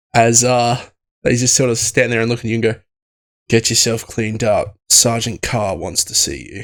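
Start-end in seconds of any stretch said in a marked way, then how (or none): 3.5-6.7 faint, mild contempt in the voice. Voicing a guard who orders a sleepy player to the sergeant: mild disdain. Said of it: "a look of, it's mild disdain".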